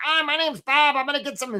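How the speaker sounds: high, odd, strange put-on crab voice. Telling a story about crabs in a trap, voicing Bob the crab, weird voice. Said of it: "Bob has a weird voice".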